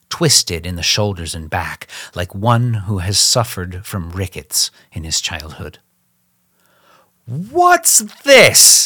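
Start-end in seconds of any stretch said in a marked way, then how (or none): 7.2-8.8 very high, shrill, loud screaming outcry. A narrator reads a man crying out at an intrusion, high screaming voice. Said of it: "he cried in a high, screaming voice".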